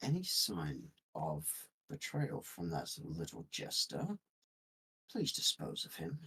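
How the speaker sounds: hushed whisper, barely audible. In a game scene, a player's character leans to a companion's ear, whispering. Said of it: "I whisper in Grim's ear".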